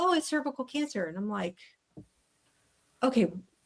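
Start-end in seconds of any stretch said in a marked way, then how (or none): 0.0-1.1 casual, matter-of-fact, breezy, offhand, pitched a little up. Retelling how a woman delivered serious news to her; imitating a casual, offhand delivery. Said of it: "It was very much like".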